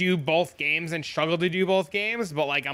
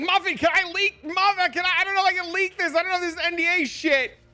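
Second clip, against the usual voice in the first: frantic, excited screaming, very high squeal; 14 semitones higher, 3 dB louder than usual. Telling a listener about seeing a Discord ping, retelling a scream. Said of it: "I was like screaming".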